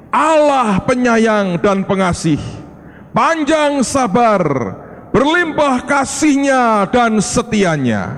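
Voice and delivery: high, slow, proclaiming cry.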